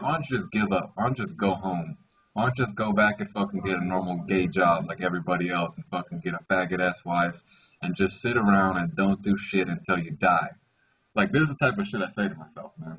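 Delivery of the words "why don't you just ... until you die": usual speaking voice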